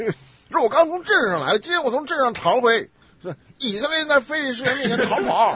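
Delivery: very loud, high-pitched Northeastern Chinese accent. Showing how a Northeastern person would read this passage, in a Northeastern Chinese accent. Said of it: "你叫东北人来读这段".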